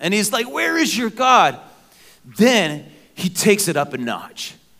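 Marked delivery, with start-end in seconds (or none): 0.5-1.6 high, jeering, mocking taunting tone. Retelling how Elijah taunted the Baal worshipers: mocking as Elijah. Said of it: "And he's just mocking them".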